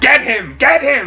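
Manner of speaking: put-on very high, slow, drawn-out enraged voice. Retelling a comic scene, Ra's al Ghul orders his followers to attack: imitating Ra's al Ghul pissed off. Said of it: "he's, like, pissed".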